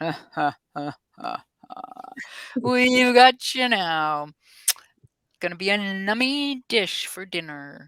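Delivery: menacing, slow, gloating villain voice with laugh. Voicing a bad guy coming from the soil, in a deeper voice. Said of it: "another deeper voice going".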